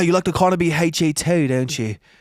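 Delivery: put-on Australian accent throughout. Speaker imitating a man from a video talking about gear, imitating an Australian accent. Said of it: "This is his accent".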